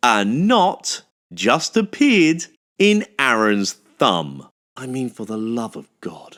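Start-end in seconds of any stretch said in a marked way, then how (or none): 0.0-4.5 a little slower, deliberate, spelled-out delivery. Repeating the news about a knot in aaron's thumb, a little slower. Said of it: "say that again a little bit slower".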